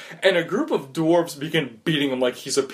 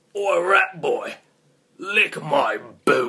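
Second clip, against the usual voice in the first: grimy, grungy thug voice, words spat out. A huge man behind the player's character looks down and spits: grungy voice. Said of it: "He looks down in a grungy voice".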